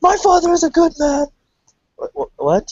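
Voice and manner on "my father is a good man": mock defensive outburst, higher and louder. Retelling a man's sudden outburst about his father: imitating someone getting super defensive. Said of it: "he gets super defensive real fast".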